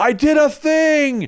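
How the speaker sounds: put-on, very high, loud, boastful, triumphant yell. Act out Jeremy Clarkson standing up on his farm series, imitating Jeremy Clarkson yelling. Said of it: "he stands up and yells".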